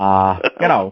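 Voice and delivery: bad, halting impression voice. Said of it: "There was my bad Obama impression".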